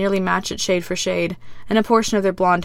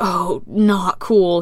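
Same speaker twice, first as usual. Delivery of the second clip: put-on words wheezed out in pain. Reading a scene where a prisoner crumples in pain, wheezing. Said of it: "he wheezes".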